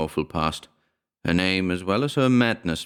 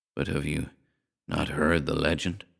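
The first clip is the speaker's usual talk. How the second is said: weary tone, lower and quieter; 3 semitones lower, 5 dB quieter than usual. Reading a story aloud, a father answering his son: rather tired voice. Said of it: "in a rather tired voice".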